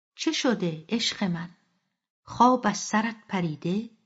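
plain

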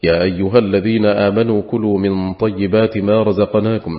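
plain

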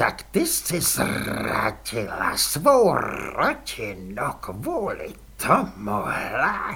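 nasty, ugly, very slow, swooping voice. The baroness addresses another woman; nasty voice. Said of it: "baronka ošklivým hlasem".

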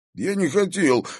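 thin, little, squeaky, very high voice. Narrator voices a boy protesting after being grabbed by the collar: squeaky. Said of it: "пискнул Димка".

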